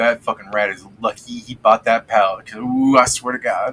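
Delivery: quiet grumbling muttered under his breath. Voicing a shopkeeper grumbling after a customer leaves: muttering under his breath. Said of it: "he's just muttering under his breath".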